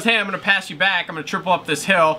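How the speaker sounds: normal talking voice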